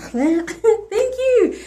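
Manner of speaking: overwhelmed, excited delivery.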